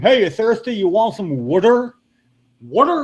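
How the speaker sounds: high, teasing, mocking New Jersey accent. Retelling how people in north carolina pointed at him and laughed, imitating their mocking. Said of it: "pointing at me and laughing, going".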